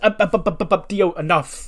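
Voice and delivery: high, hurried, frantic, abrupt cut-off.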